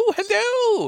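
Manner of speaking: put-on Scottish accent, pitched very high. Imitating a film character's Scottish accent: Mrs Doubtfire Scottish accent. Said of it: "pulls his, uh, Scottish accent".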